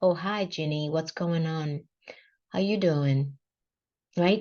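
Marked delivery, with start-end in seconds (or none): 0.0-3.4 flat, indifferent, bored, unenthusiastic tone. Speaker contrasts an enthusiastic greeting with an unenthusiastic one: flat, indifferent tone. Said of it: "Kind of like blah".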